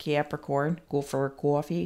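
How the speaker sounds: Boston-accented speech. Repeating a star sign on purpose, in a boston accent. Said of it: "I said that with a Boston accent".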